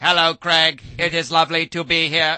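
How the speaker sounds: loud, high-pitched, booming robot voice. Showing how the robot's voice, done by Craig, sounded, Craig's robot voice. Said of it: "the voice sounded like this".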